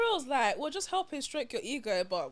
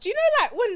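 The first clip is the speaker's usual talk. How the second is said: raised pitch, higher and louder; 10 semitones higher, 11 dB louder than usual. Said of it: "why is your voice so high now?".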